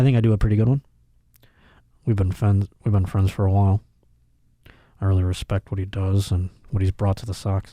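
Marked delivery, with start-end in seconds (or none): 2.0-7.7 put-on flat coach voice, lower pitch. Covering the camera and speaking as the coach: Bill Belichick impression. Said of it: "so you guys think it's Bill Belichick".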